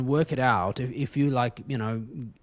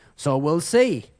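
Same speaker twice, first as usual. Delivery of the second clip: raised put-on Texan or Southern US accent; 5 dB louder than usual. Retelling a joke told by a man, imitating a Southern accent. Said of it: "he's got this very like Texan or Southern accent".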